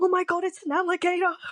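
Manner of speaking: thrilled, dead-certain, excited, confident high exclamation. Retelling pointing at a lizard around the campfire: imitating own excited, confident shout. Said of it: "with such excitement and confidence".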